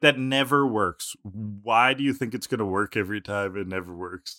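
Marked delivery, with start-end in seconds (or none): none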